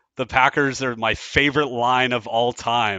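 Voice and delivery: ordinary talk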